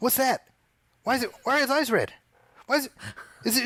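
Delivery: mock very high, rapid, agitated worked-up delivery. Recalling watching a video with his wife, imitating his worked-up wife. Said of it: "she was like really getting worked up".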